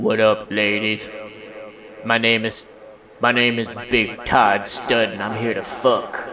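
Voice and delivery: his sexiest, seductive come-on voice. Told to give his sexiest voice right now, in his sexiest voice. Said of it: "Give him your sexiest voice right".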